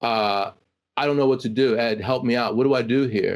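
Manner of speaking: put-on near-tearful, pleading voice. Retelling a friend's phone call asking for help: imitating a friend almost crying. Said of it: "almost crying".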